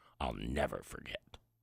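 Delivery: very low, hushed, deep tone. Speaker acts out a common saying for listeners, in a deep tone. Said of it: "notice my tone ... that's kind of a deep tone".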